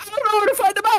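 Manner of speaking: freaking out, panicked, frantic, very high voice. Voicing the other guy, held until his buddy brings a map, freaking out. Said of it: "The other guy's like freaking out".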